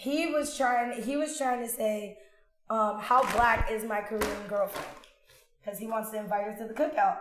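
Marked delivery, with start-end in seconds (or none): none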